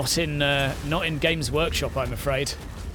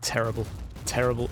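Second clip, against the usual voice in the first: plain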